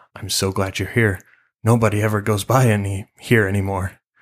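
whispering low, hushed. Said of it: "says in a low whisper".

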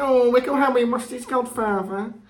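put-on silly, high, cooing baby-talk voice. Quoting a line she says to him, imitating her baby voice. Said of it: "she uses a baby voice".

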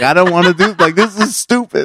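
mock crying while talking. Recalling a picture the speaker's mom found hilarious, acting out own past crying. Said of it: "I was like crying about it".

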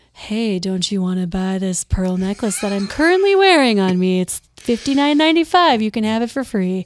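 upscale, luxury-sounding sales voice. Contrasting their own lighthearted voice, the speaker demonstrates a luxury-sounding sales voice. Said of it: "like if like very luxury sounding".

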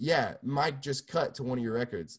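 plain

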